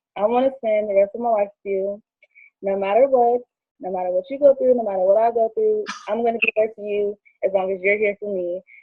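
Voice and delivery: ordinary talk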